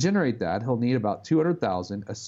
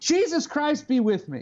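play-acted, uncomfortably loud, very high-pitched outcry; 13 semitones higher than usual. Speaker quotes a man crossing himself quickly, retelling his much louder voice. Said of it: "in a much louder voice than I'm comfortable with".

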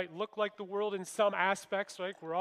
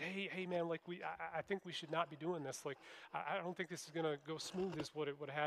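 hesitant, stumbling, hushed half-whisper; 2 semitones lower, 10 dB quieter than usual. Retelling a warning to a friend about what they were doing: imitating a half-whisper. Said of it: "I kinda whispered".

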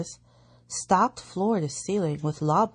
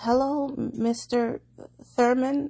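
halting, stuttered delivery, pitched up; 7 semitones higher than usual. The narrator greeting his father, Mr. Thurman, stuttering. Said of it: "I stuttered".

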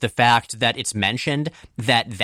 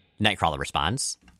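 ordinary talk, nothing marked

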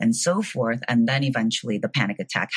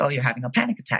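put-on breezy, offhand, matter-of-fact nonchalant tone. Retelling the little brother's reply on the phone: imitating a nonchalant tone. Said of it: "He said it very nonchalantly".

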